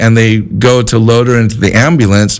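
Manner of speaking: ordinary talk, nothing marked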